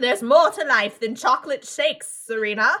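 put-on school headmistress voice. Retelling what grandma says to serena, voiced like a school headmistress. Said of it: "like the headmistress of my school".

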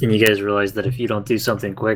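ordinary delivery

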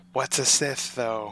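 soft, slow, hushed half-whisper floating upward. Narrating a scene, the speaker gives a character's question as a half-whisper. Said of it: "tries to like float up and whisper".

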